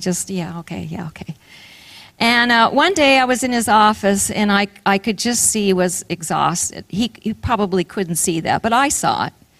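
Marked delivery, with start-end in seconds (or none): 0.3-1.3 much softer, quiet, polite mumble. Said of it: "kinda quietly and polite".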